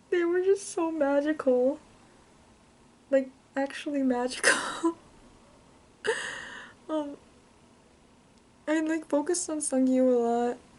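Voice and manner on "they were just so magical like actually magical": tearful, crying while talking. Fan recounting a live concert, crying while talking. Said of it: "sorry, I'm crying".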